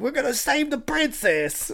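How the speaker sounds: very high, swooping cartoon New York Italian accent. Imitating Mario from the cartoon: New York Italian plumber voice. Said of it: "he's a New York Italian plumber".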